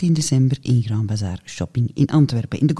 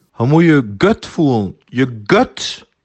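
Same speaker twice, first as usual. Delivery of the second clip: put-on West Flemish accent, louder; 6 dB louder than usual. Quoting a man who repeated himself, in a West Flemish accent. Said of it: "door zijn West-Vlaams accent".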